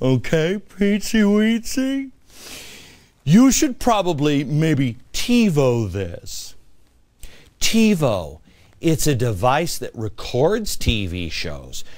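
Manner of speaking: slow, deliberate, condescending, one word stretched out. Addressing a listener directly, speaking slowly for them. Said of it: "I'm going to speak slowly here for you".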